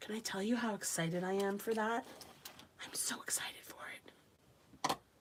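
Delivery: thrilled, dramatic whisper, bursting with excitement. Talking to the group about an upcoming activity, the speaker speaks in an excited whisper. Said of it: "I don't know why I'm whispering".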